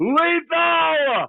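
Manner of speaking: very high, drawn-out, carrying holler. Retelling how a wrestler screamed for him across the building: imitating someone screaming. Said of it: "I would hear him screaming for me".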